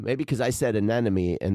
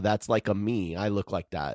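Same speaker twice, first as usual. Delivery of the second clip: ordinary talk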